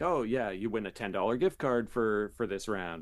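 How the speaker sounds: ordinary delivery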